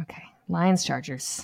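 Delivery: sighed, breathy lead-in. Moving on to the next matchup in a football preview, sighing. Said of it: "Why are you sighing?".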